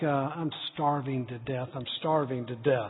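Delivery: acted grumbling under breath. Speaker recalls stomping out of the kitchen as a child, reenacting muttering under breath. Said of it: "saying something under my breath like".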